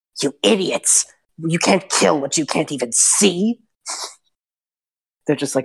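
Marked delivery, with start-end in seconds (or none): 0.2-3.6 bickering, snapping hag voice. Narrating three bickering hags as one scolds the others: Tripwees voice. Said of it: "And then you hear Tripwees".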